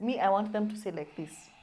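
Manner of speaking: usual speaking voice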